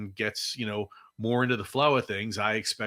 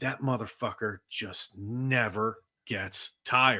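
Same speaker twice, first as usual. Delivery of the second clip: put-on exasperated voice. Quoting what LeBron James said on a podcast about Maxey: imitating LeBron James sounding exasperated. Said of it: "he sounds exasperated when he's".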